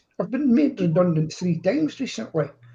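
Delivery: normal talking voice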